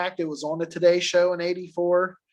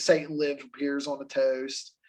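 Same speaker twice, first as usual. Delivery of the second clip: normal talking voice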